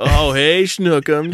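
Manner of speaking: play-acted, high-pitched, jeering, teasing tone. Retelling how the other kennel dogs teased the new dog: imitating dogs taunting. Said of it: "giving it shit".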